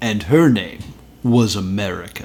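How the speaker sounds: dignified, polished, very distinguished documentary-style narrator voice. Quoting a show's narrator line: imitating a distinguished narrator voice. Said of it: "this very distinguished voice says".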